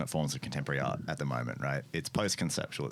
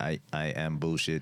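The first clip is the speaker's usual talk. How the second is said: put-on robot voice with Greek accent. Doing a bit as a robot with an accent, greek robot voice. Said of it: "You sounded like a Greek robot".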